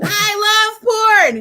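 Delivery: shrill high-pitched screamed outburst. Retelling how he reacted to hearing a friend's name: imitating someone screaming. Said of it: "He's, like, screaming".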